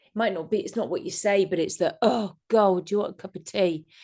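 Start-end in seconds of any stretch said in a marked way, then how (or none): 2.0-3.8 grudging, put-upon, chore-like tone. Showing how tone matters when offering tea, offering tea like a burden. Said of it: "like it's such a burden".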